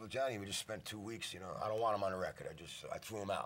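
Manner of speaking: ordinary talk, nothing marked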